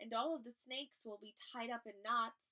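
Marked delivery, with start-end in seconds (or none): none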